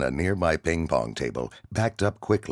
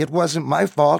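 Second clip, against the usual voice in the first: very high, trembling, shaky outcry; 12 semitones higher, 7 dB louder than usual. Narrating a kid crying out to an enraged soldier, shaky voice. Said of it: "the kid cried out in a shaky voice".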